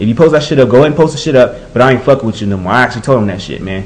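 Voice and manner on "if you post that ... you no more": plain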